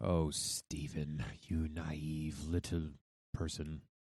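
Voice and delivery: slow, patronizing, condescending talking-down tone. Answering Stephen's claim about monogamy and happiness: condescending. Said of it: "That sounded condescending".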